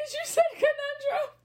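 high, tearful fit of laughter, laughing to tears. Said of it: "I'm laughing so hard I'm crying".

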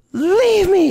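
put-on very high, very loud, shrieking little-kid yell. Recalling pushing away someone who came to say goodbye, retelling a small child's yell. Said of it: "I was like yelling".

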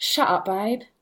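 strong Essex accent. Asked whether they can do Essex, giving an Essex accent. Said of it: "Can you do Essex? Only thing I do is things like".

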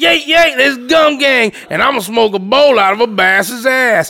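slow, wild, toothless-sounding rural drawl. Describing a toothless wild redneck stuntman, then imitating Gum Gang. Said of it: "He's just this toothless, wild-ass redneck".

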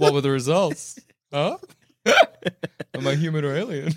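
play-acted smug, self-satisfied, gloating, taunting delivery. Retelling how someone asked about the results, mock-smug. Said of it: "What are the results said smugly?".

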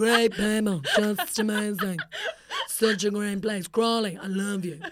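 swooping, animated, big wide pitch swings. Describing a visit to a town in a Trump impression. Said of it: "Why am I doing a Trump impression?".

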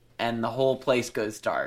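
ordinary delivery

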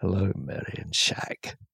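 acted sultry voice, low and soft. Reading a listener's Patreon name as if to a latest conquest, George Lazenby voice. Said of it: "read in a George Lazenby's voice as if he's one of his latest conquests".

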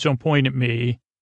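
normal talking voice

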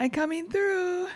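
put-on high-pitched small child voice, shouting. Retelling a child pushing a grocery cart: imitating a child shouting. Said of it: "he randomly shouts out".

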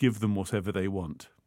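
ordinary delivery

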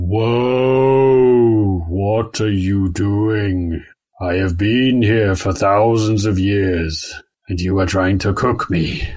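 very low tree voice, whoa drawn out long. Narrating a scene and voicing the tree that Maud hears, in a very low tree voice. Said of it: "this very low voice is kind of like".

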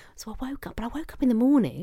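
hushed whisper. Telling listeners an embarrassing story from the night before, whispering. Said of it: "I don't know why I'm whispering".

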